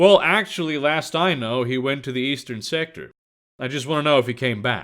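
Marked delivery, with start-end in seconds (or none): none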